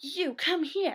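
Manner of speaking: put-on furious yelling, pitched high. Retelling how a man peeked into the drive-thru, retelling him yelling at a girl. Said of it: "he starts yelling at this girl".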